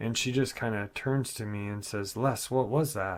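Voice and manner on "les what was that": sudden panicked, alarmed voice. Retelling the little sister's question about a noise: imitating a panicked voice. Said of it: "in a panicked voice".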